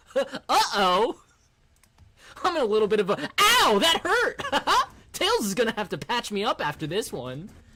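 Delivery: high cartoon voice with wide, swooping pitch swings. Imagining a Sonic mascot actor being chased: Sonic voice. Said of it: "He's doing the voice the whole time".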